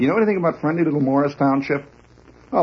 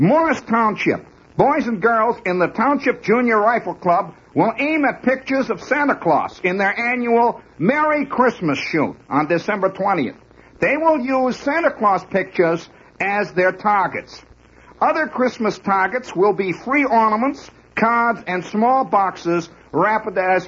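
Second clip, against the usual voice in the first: fake New Jersey accent, newsreader style, pitched up; 7 semitones higher than usual. Reading a news item aloud to listeners, in a put-on Jersey accent. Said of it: "Maybe I better adopt my Jersey accent".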